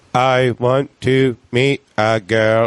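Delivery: very slow, computerized speech-box voice. Retelling a comic's joke as delivered through a voice box: imitating a speech voice box. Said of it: "program his whole set in jokes in the voice box".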